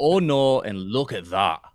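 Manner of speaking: put-on loud, slow Scottish accent. Retelling what Scots said after a good shot: imitating Scottish accent. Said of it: "It's pretty good".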